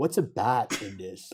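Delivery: put-on American accent. Speaker acting out americans puzzled by a french word, american impression. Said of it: "it was an American impression".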